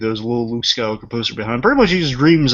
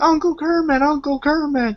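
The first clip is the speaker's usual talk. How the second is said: mock very high, frantic, drawn-out panicked cry. Retelling a Muppets scene, imitating panicked Robin. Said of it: "so he's panicking".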